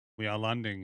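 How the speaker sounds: monotone, utterly deadpan, flat delivery. Retelling what a pilot said over the radio: imitating a deadpan voice. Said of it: "in the most deadpan voice".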